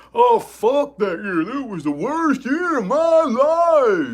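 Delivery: very high, very slow, whiny, mocking complaining tone. Imitating people who complain about the past year: mocking whiny complainer voice. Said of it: "you do the exact same, like, character?".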